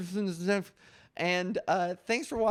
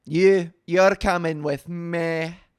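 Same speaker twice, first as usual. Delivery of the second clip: put-on ogre voice, louder; 3 semitones lower, 9 dB louder than usual. Joking about Pride plans, doing a Shrek voice. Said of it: "Like Shrek".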